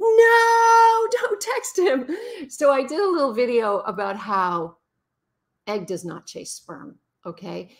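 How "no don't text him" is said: play-acted, loud, very high, very slow unison shriek. Retelling how the girls in the bathroom answered: imitating girls screaming in unison. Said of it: "every girl in unison in the bathroom screamed".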